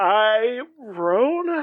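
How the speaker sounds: unsure, high, awkward, rising like a question. Imagining the other speaker answering the computer: imitating awkward self-introduction. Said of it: "being like".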